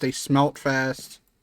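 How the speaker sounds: normal talking voice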